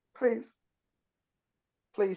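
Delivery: very high, sobbing, weeping voice. Voicing a captive begging for mercy before being killed: pleading and weeping. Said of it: "he starts weeping".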